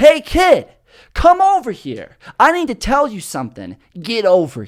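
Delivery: called-out voice.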